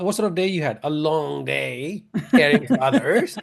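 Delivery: put-on Australian accent slipping in. Imagining a question about someone's day, the speaker slips into an Australian accent. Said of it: "my Australian accent came out".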